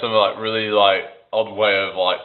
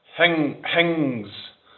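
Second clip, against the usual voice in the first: put-on broad Glaswegian, th dropped: "things" as "hings"; 8 semitones higher than usual. Showing how some speakers drop the T: imitating a thick Scottish accent. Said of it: "really thick Scottish accent".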